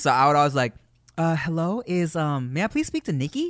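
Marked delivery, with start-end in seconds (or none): 1.2-3.5 play-acted sweet, harmless, innocent voice, slow and polite. Retelling calling a girl's house, imitating an innocent-sounding voice. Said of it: "as innocent as possible".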